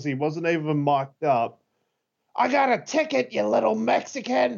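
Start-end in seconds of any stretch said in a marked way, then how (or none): 2.4-4.6 very high, shrill, ragged, raspy top-of-the-lungs yell. Retelling a wrestler's reply to an opponent: retelling a yell at full volume.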